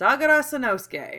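bone-dry delivery. Sano gives his own name to Yaiko: dry. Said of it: "Sano said dryly".

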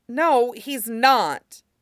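steady, firm, decided tone. Reading Aang's reply to Sokka in a story, said firmly. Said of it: "Aang said firmly".

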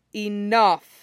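cutting, sharp, curt delivery. The sannin blocks a kunai and holds two fighters apart, sharp. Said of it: "and then says sharply".

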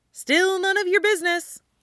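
bright, breezy, cheerful, very high voice. Stiles answers Jake's complaint of confusion: cheerful. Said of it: "Stiles says cheerfully".

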